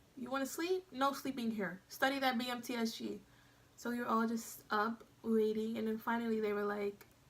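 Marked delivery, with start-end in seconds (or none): none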